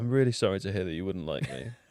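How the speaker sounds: exaggerated, over-earnest, over-sincere tone. Answering a teasing remark with an incredibly sincere comment: exaggerated sincere tone. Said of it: "I'm gonna respond to you with an incredibly sincere comment".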